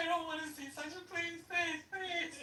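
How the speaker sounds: play-acted very high, tearful crying plea. Retelling begging while in labor, acting out tearful pleading. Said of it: "And I started crying".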